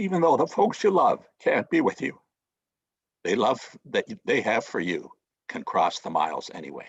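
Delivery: choked-up voice with emotion, swooping pitch. Finishing a Christmas story for the folks listening, choking up. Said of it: "I'm choking up a bit here".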